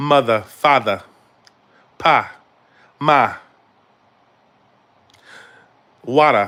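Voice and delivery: put-on Boston accent. Speaker sounding out words suggested by viewers, boston accent. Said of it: "That's the Boston accent".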